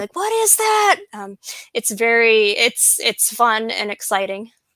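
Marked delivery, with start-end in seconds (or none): 0.2-1.0 put-on high, excited, amazed childlike yell. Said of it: "all start yelling".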